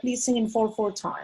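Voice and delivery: plain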